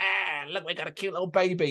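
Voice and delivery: soft, creepy demonic creature voice.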